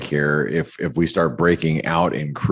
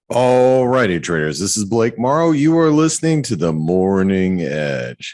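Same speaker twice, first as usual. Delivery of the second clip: morning-show announcer voice, "Edge" drawn out; 4 semitones higher than usual. Opening a morning trading show, trying out a radio host voice. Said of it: "Did I sound like a radio host?".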